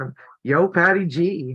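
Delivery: slow, clumsy, bad put-on Brooklyn accent. Naming who sent the fabric pieces: bad brooklyn accent. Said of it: "I can't do the Brooklyn accent well".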